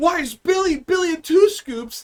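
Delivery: put-on high, drawn-out, spoiled bratty rich-kid voice. Retelling a show's flashback scene: imitating a bratty rich kid. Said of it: "a bratty little fucking, like, rich kid".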